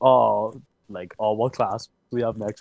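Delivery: ordinary talk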